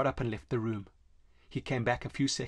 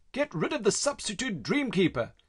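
high-pitched shout; 9 semitones higher than usual. The doctor hurries off to his next appointment, yelling over his shoulder. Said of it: "he yelled over his shoulder".

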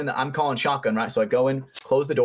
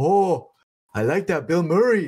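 put-on heavy, thick Hawaiian accent, laid on, pitched up; 5 semitones higher than usual. Retelling what a man at the gas pumps said to him: thick hawaiian accent. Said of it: "in a thick ass Hawaiian accent".

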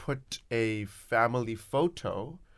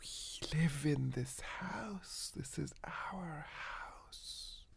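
very hushed, slow, creeping whispered monster voice; 5 semitones higher, 15 dB quieter than usual. Voicing the boogeyman under the bed calling to a child: boogeyman whispering. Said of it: "starts whispering".

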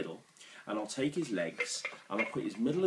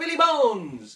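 very loud, shrill, high-pitched shout; 13 dB louder than usual. Asking everyone to shout the magic words louder: shouting louder. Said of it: "Everyone shout".

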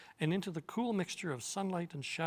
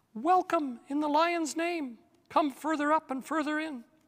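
shrill, very high, loud, squeaky mouse voice; 11 semitones higher, 9 dB louder than usual. Reading a story aloud, narrator voices the talking mouse's greeting: shrill Reepicheep voice. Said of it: "said in its shrill voice".

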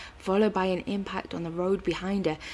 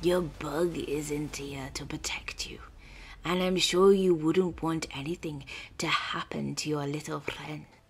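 hissed, dry and rattling; 3 semitones lower than usual. Narrator reads the scorpion-man Sting addressing her mid-fight: Sting's dry, rattling hiss. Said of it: "A scorpion body the size of a car, with a male human torso where the head should be, ... he said in a dry, rattled hiss, reminding her of dead leaves blowing over stones".

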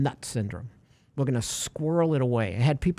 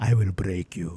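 awful, deliberately bad, deep put-on boxer voice; 6 semitones lower than usual. Talking about the Rocky villain, doing a bad Drago impression. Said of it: "It's terrible".

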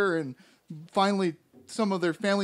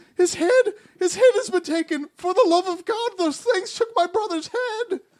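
very high, frantic, hysterical crying voice; 12 semitones higher, 7 dB louder than usual. A game master voicing Frezzo Letty after an attack, hysterical Frezzo Letty. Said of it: "rushes up to you with hysteria in his eyes".

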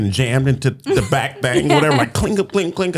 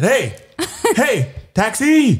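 reenacted shout, much higher; 12 semitones higher than usual. Retelling helping an older woman catch a cab, retelling a shout for a taxi. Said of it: "And I said".

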